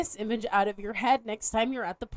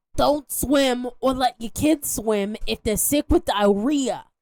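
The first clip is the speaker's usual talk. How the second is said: put-on New York accent, louder; 5 dB louder than usual. Reading a health agency quote aloud when asked to: Doctor Fauci voice. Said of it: "Do it as Doctor Fauci".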